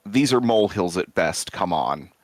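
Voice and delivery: ordinary delivery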